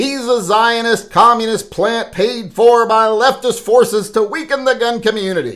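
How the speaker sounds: emphatic, exclaiming delivery, very high pitch. Reading a commenter's post aloud: reading a comment with exclamatory emphasis. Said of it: "I read it like there should be an exclamation point".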